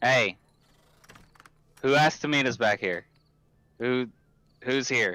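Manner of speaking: loose, calling-out half-shout. A player's character calls out behind a building for whoever asked to meet: yelling. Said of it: "Just kind of yelling".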